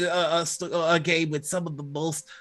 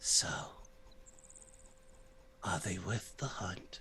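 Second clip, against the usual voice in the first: very quiet, hushed whisper; 9 semitones lower, 15 dB quieter than usual. Narrating the scene as the stag speaks to the wolf, whispering stag. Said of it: "the stag whispers".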